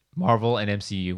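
cracking voice. Adding a quick note during round two of a game, voice cracking. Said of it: "my voice is cracked".

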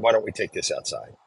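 fearless, unafraid, confrontational tone. Retelling a tense confrontation with another inmate: retelling an unafraid challenge. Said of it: "I used my tone and my voice".

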